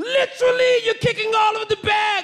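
poor fake British accent, very high-pitched. Retelling a subway security guard scolding him for kicking bags, in a bad British accent. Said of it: "I don't do a good British accent".

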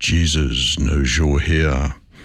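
low, slow, mysterious voice.

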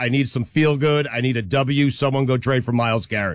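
normal talking voice

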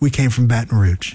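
flat deadpan tone. Retelling a mom's answer to a question on camera: retelling a deadpan reply.

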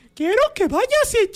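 high cartoon mouse impression. Asked by listeners to swear in Mickey Mouse's voice, doing a Mickey Mouse voice. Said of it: "miéntame la madre con voz de Mickey".

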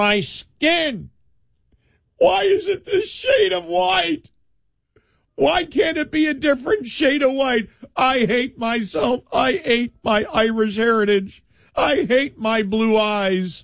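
mock high, slow, self-loathing whine.

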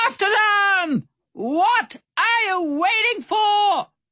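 very high-pitched, shrill shouting. Barracuda Bill shouts from the railing as the others escape in the boat, shouting. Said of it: "Barracuda Bill shouted from the railing".

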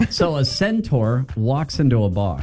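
ordinary delivery

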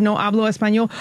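usual speaking voice

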